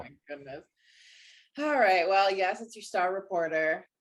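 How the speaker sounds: sounding defeated right from the start. A reporter greeting the show's host right after being introduced, in a defeated tone. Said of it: "I sound so defeated".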